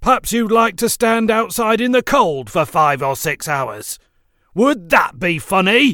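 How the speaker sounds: thundering, booming, very loud and high. Speckle to Tom, who laughed, thundering threateningly. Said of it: "he thundered in a threatening manner".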